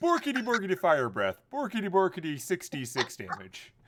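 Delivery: shrill, loud, swooping delivery. Joking on a voice call as a game character: Swedish Chef voice. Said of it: "I should set it to Swedish Chef".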